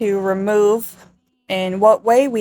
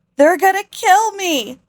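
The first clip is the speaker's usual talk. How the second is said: very high, blubbering, sobbing wail through tears; 10 semitones higher than usual. Retelling a story, acting out a woman's outburst with mock crying and screaming. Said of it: "she starts blubbering, crying, screaming".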